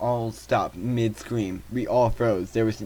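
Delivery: ordinary delivery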